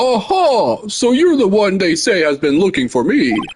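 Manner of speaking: jolly, swooping, sing-song character voice. Asked to grab a voice quickly for a character, using a Santa Claus voice.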